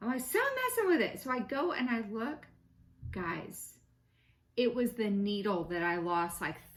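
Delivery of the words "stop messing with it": mock shrill yell, very high pitch. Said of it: "yelling at him".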